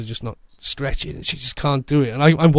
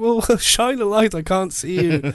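put-on call across a distance, high and light; 6 semitones higher than usual. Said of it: "shouting at this poor girl".

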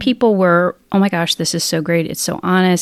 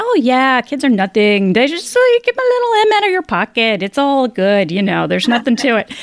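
put-on Irish accent, high and lilting; 5 semitones higher than usual. Retelling a Dana Carvey bit about asking whether to have kids, answer in the mother-in-law's Irish accent. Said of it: "the mother-in-law would say in the Irish accent".

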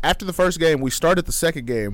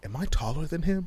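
secretive, soft, hushed half-whisper; 3 semitones higher, 8 dB quieter than usual. Retelling what a woman half-whispered about a man standing nearby; retelling a half-whisper. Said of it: "She looks at me and whispers".

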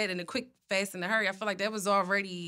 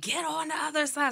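high-pitched yell through a bullhorn; 7 semitones higher than usual. Retelling being pulled over young, quoting the man on the bullhorn, imitating someone yelling. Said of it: "he's like yelling on the bullhorn".

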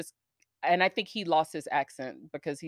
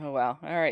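plain

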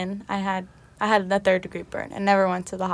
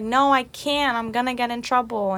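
put-on crying voice, higher; 4 semitones higher than usual. Retelling a phone call to the listener, retelling crying on the phone. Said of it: "I called you crying".

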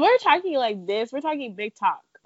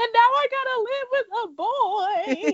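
very high, slow, tearful crying, words stretched; 13 semitones higher than usual. Retelling a Friends episode where Monica cries about moving out: imitating Monica crying. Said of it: "And she's, like, crying".

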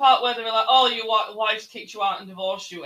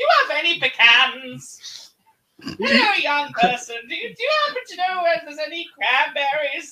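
silly, high, put-on old man voice; 7 semitones higher, 4 dB louder than usual. Recalling a character in a game the speaker loved; stupid old man voice. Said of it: "saying old man phrases in like the stupid voice".

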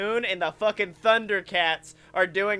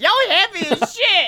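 put-on complaining seat voice, higher and louder; 11 semitones higher, 7 dB louder than usual. Voicing the seat a rider sits in: put-on talking seat voice. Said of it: "the anthropomorphic version of the seat you're in".

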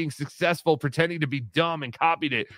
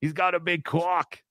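put-on Boston accent. Showing how to say the rhyme: Boston accent. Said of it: "say it with that Boston kinda accent".

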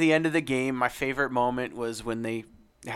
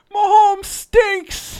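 mock drunk voice, higher and louder; 12 dB louder than usual. Retelling a drunk fan nine rows up heckling the crowd: imitating a drunk heckler. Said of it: "Some old drunk dude".

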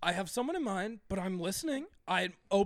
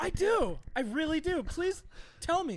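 high, slow, very confident, flamboyant male voice; 7 semitones higher than usual.

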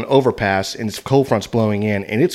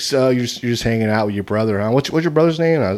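put-on fast-talker voice, getting faster. Retelling a guy's questions about his night, imitating fast talking. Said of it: "he was talking kind of fast".

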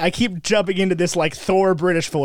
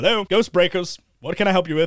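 plain

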